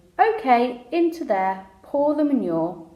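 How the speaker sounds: ordinary delivery, nothing marked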